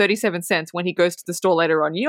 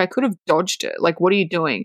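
put-on angry, pissed-off boy voice. Retelling a film scene where Teddy is pulled off the tracks: imitating an angry boy. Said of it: "Teddy's pissed".

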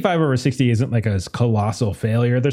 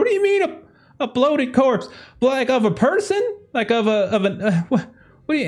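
very high-pitched, flustered, panicked stammering; 13 semitones higher than usual. Voicing a woman demanding answers about a corpse: panicked questioning. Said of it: "now panic starts to".

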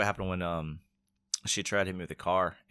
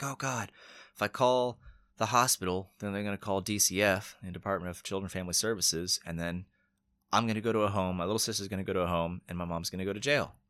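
ordinary delivery

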